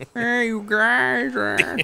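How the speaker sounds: bad, very high-pitched, creaky, drawn-out drawl. Trying a Ray Romano impression while admitting it won't be good. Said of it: "I can't do a good Ray Romano impression".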